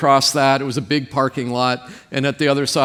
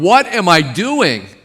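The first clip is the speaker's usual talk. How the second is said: play-acted high, slow, drawn-out shout; 5 semitones higher, 4 dB louder than usual. Retelling standing in slush and looking up at the sky: imitating own shout. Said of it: "literally shouting".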